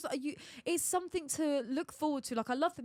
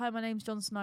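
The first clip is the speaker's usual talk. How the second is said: normal talking voice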